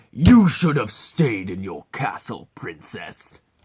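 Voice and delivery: low, loud, menacing, big burly orc voice. Showing voices for an orc arena champion villain, low and threatening. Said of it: "Low and threatening".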